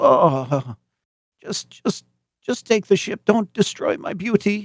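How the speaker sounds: acted half-conscious groaning plea, very high, dazed. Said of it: "you hear this groaning, and, and the engineer guy wakes up and goes".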